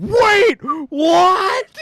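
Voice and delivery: very high, shrill, bloodcurdling shriek. Telling the listener how they screamed while being chased: retelling a bloodcurdling scream. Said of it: "you just blood curdling screamed like".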